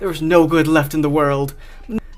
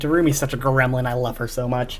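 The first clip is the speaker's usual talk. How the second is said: ordinary talk, nothing marked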